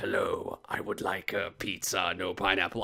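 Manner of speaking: very deep, low, hushed put-on character voice. Retelling a scene, the speaker imagines the man talking, doing his voice. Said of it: "could you imagine him ordering a pizza with that voice".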